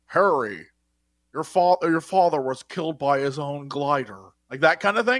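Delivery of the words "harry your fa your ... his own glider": put-on slow, unhurried, very old butler voice. Retelling a scene where the butler comes in: imitating a very old man butler. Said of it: "he's, like, a very old man".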